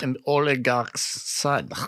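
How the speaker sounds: put-on Russian-accented voice. Asked about a past bit, recounting his line in a Russian accent. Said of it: "a Russian accent with it?".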